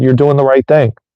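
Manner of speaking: put-on whisper. Retelling what the nurses whispered to his dad: imitating a nurse's whisper. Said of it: "the nurses whispered to him and said".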